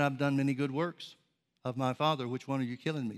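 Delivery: ordinary delivery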